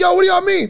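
play-acted, very high, shrill, furious scream. Retelling a video of an angry dad yelling at laughing family: imitating someone screaming angrily. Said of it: "he is cussing and screaming like".

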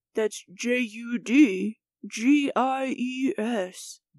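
exaggerated deep voice. Spelling out the show's email address on request: put-on deep voice. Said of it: "I can do a deep voice for you".

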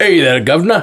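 mock, put-on Cockney accent. Discussing which accent suits a character, trying out a Cockney accent. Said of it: "So is it Cockney?".

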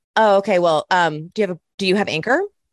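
imitated, mock condescending tone. Imitating someone drunk with power explaining podcasting: imitating a condescending tone. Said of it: "She'd be like this".

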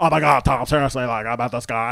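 put-on very intense, loud, high-energy talking. Imitating a woman talking to her brother, putting on high-energy intensity. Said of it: "she's very high energy, very intense".

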